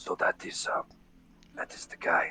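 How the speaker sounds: attempted whisper, hushed, breathy and low. Acting out what Rock would say, leaning in and trying to whisper. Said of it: "try to whisper and be like".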